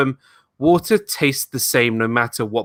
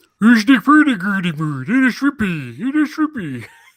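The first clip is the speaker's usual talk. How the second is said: put-on mock Swedish chef voice; 8 semitones higher, 3 dB louder than usual. A caller on the show, urged to go ahead, does a Swedish Chef impression. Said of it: "I could do a Swedish Chef impression".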